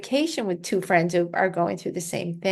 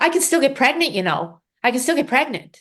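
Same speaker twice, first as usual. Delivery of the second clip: high, very panicked, frantic repetition; 6 semitones higher, 4 dB louder than usual. Recalling what a woman first said when they spoke afterwards: imitating a panicked voice. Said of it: "in a very panicked voice".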